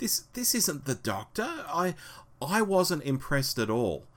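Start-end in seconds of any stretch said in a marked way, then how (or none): 0.0-1.5 high, soft, indignant protesting tone. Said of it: "But I said".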